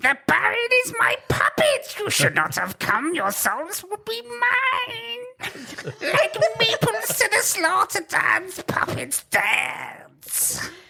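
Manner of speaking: very high, shrill, piercing voice. In a role-play game, a voice pierces the players' minds: shrill piercing voice. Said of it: "You hear a voice so shrill, it seems to pierce all your minds".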